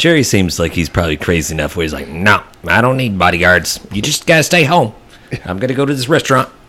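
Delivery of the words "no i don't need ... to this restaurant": put-on high old politician voice. Imagining what Jerry would say, slipping into a Ross Perot voice. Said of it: "I start sounding like Ross Perot".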